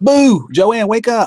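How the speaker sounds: very high, shrill, loud screaming yell. Offering to wake someone up, the speaker screams at them: screaming. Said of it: "I'll scream at you".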